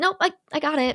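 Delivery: courteous, non-confrontational, acted. Retelling a scene with others present, imitating Jen politely declining. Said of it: "Like politely".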